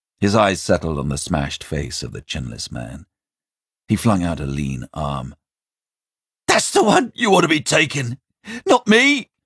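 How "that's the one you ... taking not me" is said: very high, shrill, loud, frantic yell. A man tries to get another victim taken in his place, shouting. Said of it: "he shouted".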